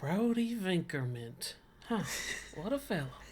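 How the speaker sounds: soft, half-to-oneself mutter under the breath. Remarking in character as another character leaves: said under the breath. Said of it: "I say under my breath as he leaves".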